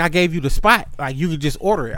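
ordinary talk, nothing marked

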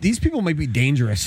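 ordinary delivery

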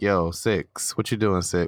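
normal talking voice

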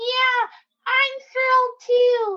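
loud voice pitched way up. On a kids' reading podcast, the puppet joins the welcome, in Camilla the frog puppet voice. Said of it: "that's Camilla the frog".

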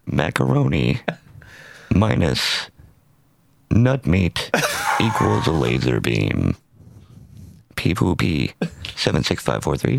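put-on robotic, synthesizer-like voice. Fulfilling a buddy's request, doing a Stephen Hawking voice. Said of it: "to do the Stephen Hawking".

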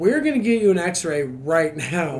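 plain

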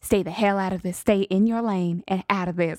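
ordinary talk

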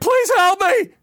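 very high screamed cry. Retelling a man shot in the toe crying out, acting out his scream. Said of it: "And he's screaming".

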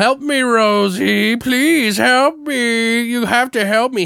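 very high, slow, drawn-out ghostly pleading. Describing a supernatural whodunit story, the speaker is imitating a dead man begging. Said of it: "the dead guy's voice begging for help".

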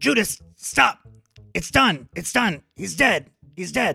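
urgent, very loud, high shouting. A player in a game yells at another character to stop him, yelling. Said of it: "I'm going to yell at Judas to stop him".

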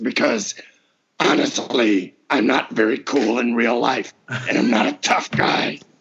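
tough monster voice. Speaker, who voices Goro in Mortal Kombat, shows off the Goro voice. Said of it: "Talking like this".

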